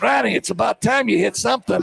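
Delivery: small, squeaky little voice. Retelling what the coach said after a trash can was kicked: imitating a coach's squeaky little voice. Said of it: "squeaky little voice".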